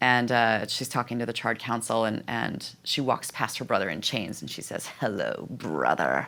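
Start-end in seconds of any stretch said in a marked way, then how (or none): 5.0-6.3 put-on very low voice, dripping with venom. Describing a trailer, quoting Fury greeting her chained brother, imitating Fury dripping venom. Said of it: "just dripping with venom".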